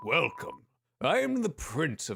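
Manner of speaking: put-on aged royal old king voice. Greeting the heroes as a character in the story, in an old king voice. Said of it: "I was doing like an old king voice".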